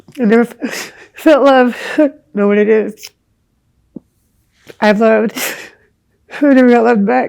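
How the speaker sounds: crying while talking. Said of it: "everybody's gonna see me crying".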